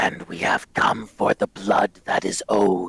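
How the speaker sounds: ghostly rasp, full of hatred. Narrator voices a skeletal figure who names itself, Leo Delisnia's hateful rasp. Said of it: "the figure rasps".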